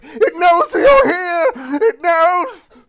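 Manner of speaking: shrill, drawn-out, very high, loud, cowering terror. Voicing a cowering figure who warns the players: cowering, frightened voice. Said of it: "the cowering form of the guy".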